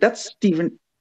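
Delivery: put-on excited panic. Retelling seeing an actor standing in front of them, imitating own freaking out. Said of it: "I'm freaking out".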